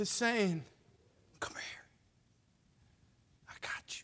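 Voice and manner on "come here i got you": very quiet, tiny, hushed, whispered voice. Speaking as god to a woman wavering in her faith, in a small voice. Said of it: "in the small voice".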